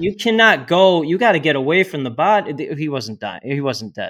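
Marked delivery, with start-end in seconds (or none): 0.0-2.5 mock yelling, high and raised. Retelling yelling at bystanders to stay away from a dying man: retelling yelling at people. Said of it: "I'm yelling at the people".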